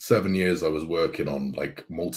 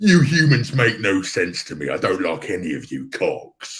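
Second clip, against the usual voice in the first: loud, swooping, exaggerated over-the-top silly Cockney accent; 3 semitones higher, 6 dB louder than usual. Recalling a cynical badger from album skits, in a silly exaggerated cockney accent. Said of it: "a really silly, exaggerated Cockney accent".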